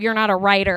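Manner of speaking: ordinary delivery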